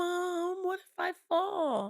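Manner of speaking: put-on very high, dramatic child voice. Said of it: "So dramatic".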